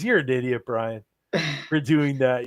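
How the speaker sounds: sarcastic, teasing tone. Imagining what he would say about the tribute, retelling a sarcastic jab. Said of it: "obviously sarcastically".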